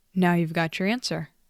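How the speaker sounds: ordinary delivery, nothing marked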